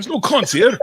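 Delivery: high, slow bad Scottish accent. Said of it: "I'm fucking up your accent badly".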